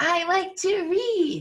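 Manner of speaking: very high, loud, eager, enthusiastic, exclamatory delivery. Teaching how to read a sentence ending in an exclamation mark, louder, more enthusiastic reading. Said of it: "a little bit louder and a little bit more enthusiasm".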